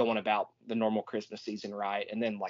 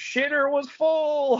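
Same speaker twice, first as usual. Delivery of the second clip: very high, shrill, loud holler; 7 dB louder than usual. Retelling a movie scene where a character yells from the driveway: imitating Cousin Eddie yelling. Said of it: "and he yells".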